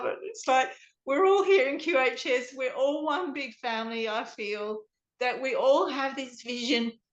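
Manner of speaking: choked-up voice catching, on the verge of tears. Guest speaking to the host about their community, choking up. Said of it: "I'm going to cry now".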